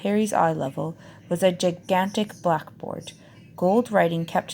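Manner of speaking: plain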